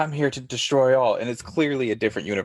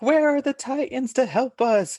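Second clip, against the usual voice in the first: put-on woman's scream, higher. Retelling a cartoon scene where a woman outside screams for help: imitating a woman screaming. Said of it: "she screams, like".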